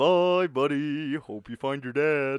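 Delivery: lilting, sing-songy, rising and falling delivery. Quoting a line on the spot when asked: sing-songy quoted line. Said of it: "that was kinda sing-songy".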